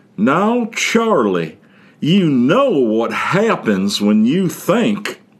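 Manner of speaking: complaining, slow, high-pitched southern drawl. Retelling a teacher's complaint in algebra class: Missus Casper's southern accent. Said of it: "complain in her southern accent".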